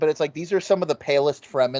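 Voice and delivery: ordinary talk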